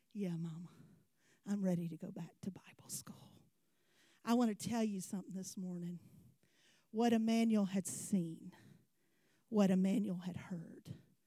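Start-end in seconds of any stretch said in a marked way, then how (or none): 0.1-3.1 choked up, lower and quieter. Retelling a reply heard over the phone: imitating someone choked up. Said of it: "choked up".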